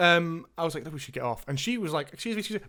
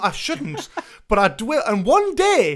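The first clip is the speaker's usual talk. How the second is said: usual speaking voice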